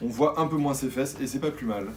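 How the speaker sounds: ordinary delivery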